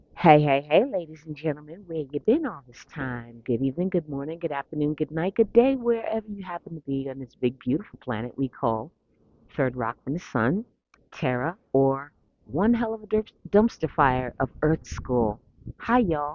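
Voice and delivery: plain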